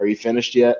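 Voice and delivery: put-on dry, flat deadpan delivery. Retelling a cameo line from a monologue: imitating Lorne Michaels deadpan. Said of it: "looks at him and deadpans and goes".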